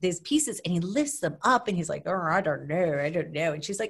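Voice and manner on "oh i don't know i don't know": put-on unsure-sounding voice with a British accent. Retelling how Prince Philip doubted the gift: imitating Prince Philip's British accent. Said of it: "I love your British accent".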